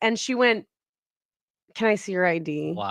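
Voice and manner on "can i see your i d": put-on soft, irritated, over-it voice. Retelling a woman asking to see their id: imitating an annoyed woman. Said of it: "just so annoyed".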